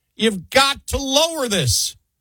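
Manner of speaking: high, loud screaming. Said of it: "they're screaming".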